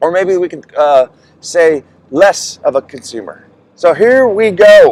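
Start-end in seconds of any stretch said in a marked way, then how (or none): 3.8-4.9 loud, pitched-up, drawn-out game show host announcing. Starting a list of tips for viewers, the speaker slips into a game show host voice. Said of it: "Without sounding like a game show host here".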